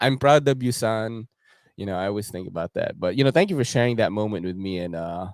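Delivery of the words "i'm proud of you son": put-on Filipino accent, spoken slowly. Imitating his late father cheering him on, filipino accent. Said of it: "He's got, like, the Filipino accent".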